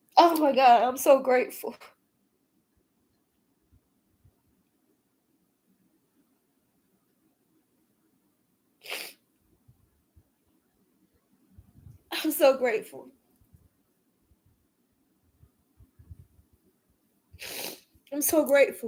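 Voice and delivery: joyful crying, weeping tears of joy. Speaker voicing gratitude, crying tears of joy. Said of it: "I'm crying tears of joy".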